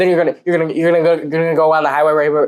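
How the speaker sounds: put-on fast stutter. Recounting how a man yelled directions in the speaker's ear, imitating fast stuttering speech. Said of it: "the guy spoke fast and stuttered".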